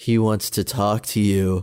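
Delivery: put-on creepy voice. Retelling a scene, speaker quotes a character on the phone, in a creepy voice. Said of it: "she does this creepy".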